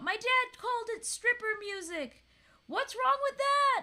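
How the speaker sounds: put-on crude girl's very high, loud shrieked outburst. Retelling a movie joke where a girl screams: imitating a girl screaming. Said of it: "just screams out".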